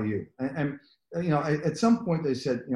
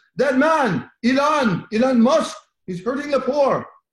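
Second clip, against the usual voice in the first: slight Jamaican lilt, very high and very loud; 12 semitones higher, 8 dB louder than usual. Retelling what a professor said about a man, in a slight Jamaican accent. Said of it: "I will give a little bit of a Jamaican accent".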